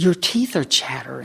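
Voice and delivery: caught off guard, shocked exclamation. Retelling what he said on noticing chattering teeth: imitating someone in shock. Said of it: "in shock".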